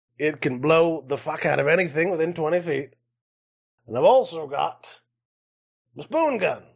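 put-on goblin character voice. Game narrator voicing a goblin showing off his guns: goblin voice. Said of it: "is a goblin".

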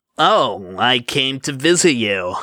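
slick, unctuous, smarmy, ingratiating charm. Narrator reading Azal's reply to Ball's question, in Azal's smarmy voice. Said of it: "he said in that smarmy voice he always used".

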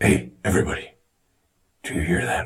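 put-on gravelly, rasping superhero voice. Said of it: "Does it sound like I'm Batman?".

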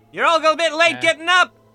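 yelling character voice. Voicing a character waking everyone in the hangar: Takumi yelling. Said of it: "yelling around".

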